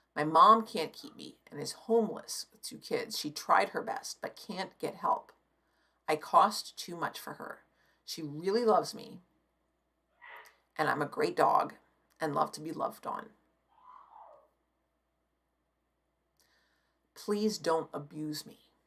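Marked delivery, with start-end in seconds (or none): 8.1-18.6 tearful, crying voice. Reading aloud a shelter dog's note, choking up, crying. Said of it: "I'm getting to, I'm crying".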